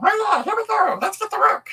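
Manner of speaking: very high, squeaky little devil voice. Showing readers how to read the devil parts, in a squeaky little devil voice. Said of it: "a little squeaky little voice like that".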